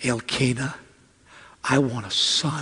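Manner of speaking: playful, mischievous, soft, very quiet whisper. Retelling a wife's request to her husband: acting out a whisper. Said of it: "she whispers to him".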